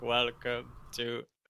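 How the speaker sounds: slow, drawn-out mock robotic voice.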